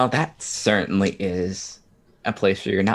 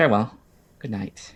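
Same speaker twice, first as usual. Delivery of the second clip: put-on refined posh accent; 2 semitones higher than usual. The narrator voices Miss Ritter saying goodnight: Miss Ritter's posh accent. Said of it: "she'll slip back into her posh accent again".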